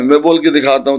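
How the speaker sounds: ordinary delivery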